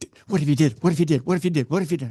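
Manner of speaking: mock frantic, fast, freaked-out, looping, panicked. Retelling what someone said while walking into a room: imitating someone freaking out. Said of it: "Steve's freaking out".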